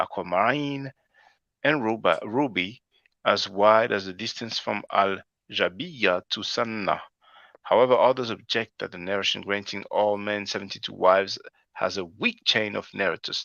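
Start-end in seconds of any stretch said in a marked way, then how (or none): none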